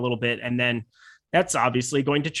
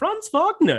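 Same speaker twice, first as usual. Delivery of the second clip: very high, cartoonish German accent; 13 semitones higher than usual. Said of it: "a German accent that sounded kind, it was very cartoon".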